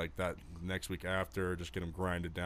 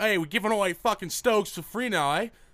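put-on very high, very loud, shrill British accent; 14 semitones higher, 10 dB louder than usual. Retelling what a New York guy said to the speaker: British accent. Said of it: "For some reason in a British accent".

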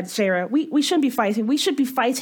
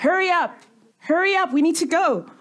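pitched-up voice calling out across a distance; 5 semitones higher than usual. Calling back to a companion lagging far behind, calling out. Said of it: "I'm going to call out".

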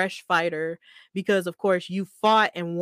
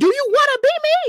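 shrill, very high, loud confrontational yell; 7 dB louder than usual. Retelling how a man confronted Sami Zayn, retelling a yell. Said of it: "And then he yelled at him like".

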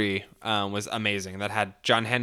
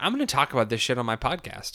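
normal talking voice

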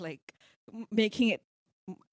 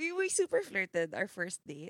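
ordinary talk

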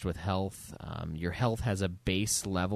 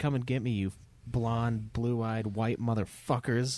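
play-acted enraged, furious, hurled delivery; 3 semitones higher than usual. Quoting a game character's insults at enemies: imitating Blazkowicz angry. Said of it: "He just gets, like, so mad".

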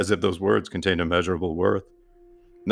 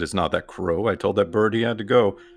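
ordinary delivery

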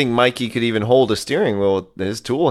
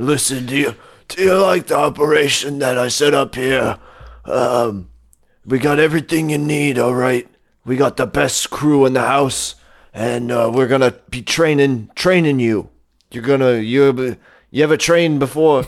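hoarse, rough-throated action-hero tough-guy voice; 2 semitones higher than usual. Retelling a movie scene as Camden: Camden voice, Stallone with throat cold. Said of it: "a Sylvester Stallone with, with a throat cold".

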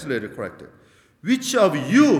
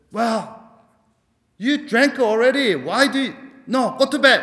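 angry, high-pitched voice; 8 semitones higher, 3 dB louder than usual. Retelling a pastor's example of a father answering his child: imitating an angry father. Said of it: "An angry voice responded".

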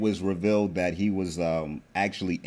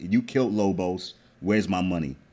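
put-on Serbian accent. Retelling a show scene where Milan confronts Ghost: Milan's Serbian accent. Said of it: "switched into his Serbian accent and was like".

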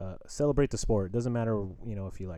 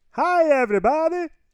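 very high, shrill, loud, squealing put-on voice; 12 dB louder than usual. In a guessing game, the speaker does a two-word impression for listeners to guess. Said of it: "That was a terrible SpongeBob impression".

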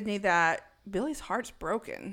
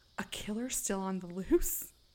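excited, quieter; 4 dB quieter than usual. Retelling a movie scene, imitating Gail's excited gasp. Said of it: "She's so excited".

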